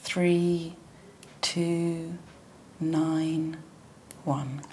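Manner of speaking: evenly spaced level numbers, pitch falling on "one". Explaining how to give a digit test item: level digits, pitch drops on one. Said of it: "you drop your tone of voice on the last one to indicate that you've finished".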